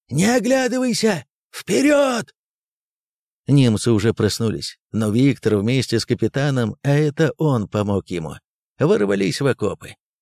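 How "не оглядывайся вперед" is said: very high-pitched close, loud shout. Someone grabs Viktor by the collar during the charge, shouting in his ear. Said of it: "и крикнул в ухо".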